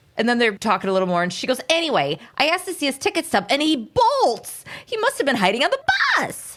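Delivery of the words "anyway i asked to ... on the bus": put-on squeaky, very high New York accent. Retelling what the bus driver says in the episode: squeaky New Yorkie voice. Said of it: "squeaky at the end, New Yorkie voice".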